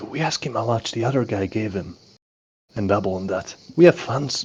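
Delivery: hushed, whispered voice. Whispering a suggestion to a fellow player in character: whispering. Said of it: "I whisper to you".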